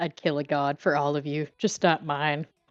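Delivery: mumbled remark, under the breath. Voicing a character answering the group about killing gods: muttering. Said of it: "Emmy just mutters".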